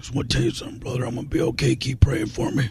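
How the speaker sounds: hushed whisper with breath running through it. Imagining a wrestler, with a big balloon, telling the audience he's fine: imitating Hulk Hogan. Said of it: "then he said".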